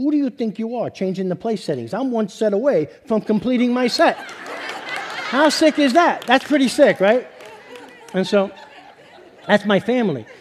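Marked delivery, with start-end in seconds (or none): 0.0-4.2 mock, huffy, indignant, outraged tone. Retelling a relative scolding the manager: imitating an indignant complaint. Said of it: "this is what she tells the manager".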